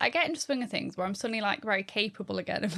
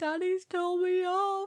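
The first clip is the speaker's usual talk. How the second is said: mock crying child voice, higher; 9 semitones higher than usual. Retelling how a child came into the room crying: imitating Lillian crying. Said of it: "the room crying".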